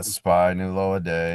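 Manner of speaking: slow, calm, flat deadpan, sounding uncaring. Doing a favorite bit on stream: Steven Wright-style flat monotone. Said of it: "I like to do it in a very calm monotone, like nobody cares".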